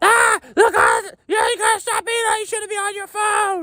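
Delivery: very high, loud, shrieking scream. Retelling how Rebecca screamed from the back of the transport: imitating Rebecca screaming. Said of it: "fucking Rebecca starts screaming".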